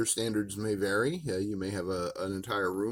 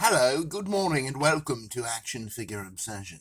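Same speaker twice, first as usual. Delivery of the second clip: fake, put-on British accent; 4 semitones higher than usual. Opening a show with a welcome: put-on British accent. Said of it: "that's my British accent".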